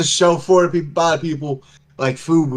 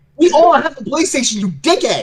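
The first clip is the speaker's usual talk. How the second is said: very high-pitched, put-on shouting; 10 semitones higher than usual. Answering a remark about playstation users in the chat: mock yelling. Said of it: "I'm yelling at him".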